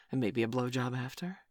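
normal talking voice

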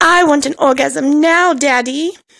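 put-on whiny, grating, annoying voice. Doing a very annoying voice, Veruca Salt voice. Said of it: "in my Veruca Salt voice, because that is a very, very annoying voice".

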